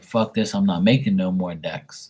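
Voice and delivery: ordinary talk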